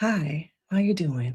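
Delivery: low, soft-spoken, toned-down professional voice. Asking the chat whether they want the low-key version, in a soft-spoken voice. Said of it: "I can be that person who has a very soft spoken voice".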